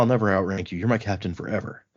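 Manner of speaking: ordinary delivery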